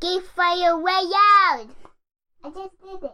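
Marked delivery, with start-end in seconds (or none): 0.0-1.7 loud yelling, higher. Answering a request to say the show name real loud: shouting loudly. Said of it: "Say Geek Father real loud".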